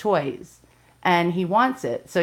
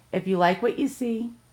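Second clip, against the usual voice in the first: voice breaking and cracking in the middle of the phrase; 3 semitones higher than usual. Video host signing off to viewers, voice cracking. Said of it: "oh, my voice cracked".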